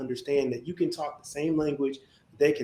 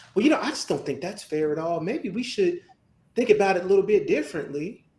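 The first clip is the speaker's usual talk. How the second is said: little put-on Southern accent; 4 semitones higher, 4 dB louder than usual. Speaker mimics people who change their tune once you're in the room, little southern accent. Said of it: "I'm gonna use my little southern accent".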